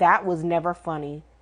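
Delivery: low, stern fatherly voice. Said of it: "looked at him stern in the face and was like".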